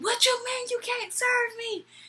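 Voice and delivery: put-on high, drunk yelling.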